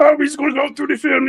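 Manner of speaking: high fast cartoon voice. Talking football about Mahomes, saying a line in Kermit the Frog voice. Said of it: "I'm trying to do my Kermit the Frog voice".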